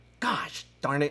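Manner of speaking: mild, fed-up, mildly mad outburst. Showing an impression of someone getting mad: imitating Ken Day getting mad. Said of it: "My impression of Ken Day getting mad is".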